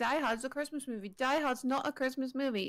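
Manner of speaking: ordinary talk, nothing marked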